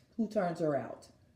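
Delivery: ordinary delivery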